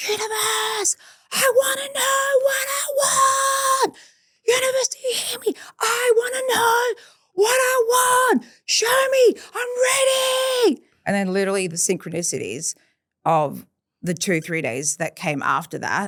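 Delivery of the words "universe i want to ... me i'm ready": put-on very high, full-throated, drawn-out scream. Recalling a 5:30 a.m. run, calling out to the universe: retelling own screaming. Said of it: "And I'm screaming".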